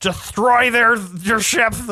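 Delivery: very high, slow, lisping, menacing voice. Imitating a lisping, angry movie villain: Ben Mendelsohn lisping impression. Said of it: "lisps through everything he says anyway, where he's like".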